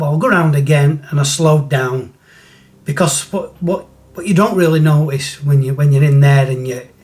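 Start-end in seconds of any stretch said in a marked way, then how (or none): none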